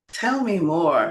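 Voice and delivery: soft, gentle, soft-spoken tone. Teaching listeners a phrase to practice, in a soft, gentle tone. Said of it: "tell me more in a soft, gentle tone".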